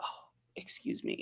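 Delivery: sounding in pain. Speaker sore from a dance class, interrupting themself: sounding in pain. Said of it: "sounding like I'm in pain".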